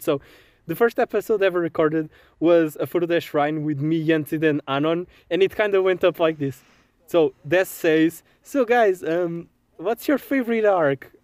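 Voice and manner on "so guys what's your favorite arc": stiff, fumbling, awkward and hesitant. Giving an impression of the first episode ever recorded: imitating an awkward first-episode answer. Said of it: "I'll give you an impression of the first episode".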